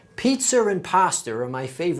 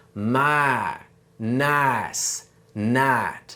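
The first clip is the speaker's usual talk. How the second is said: Southern drawl with drawn-out, single-vowel "my"; 4 semitones lower than usual. Showing how a Southern accent cuts the vowel: Southern accent. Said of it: "for a Southern accent".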